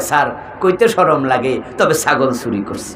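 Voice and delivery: soft, low, shy and sheepish, almost under the breath. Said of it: "ছাগল চোর আস্তে কইরা কয়".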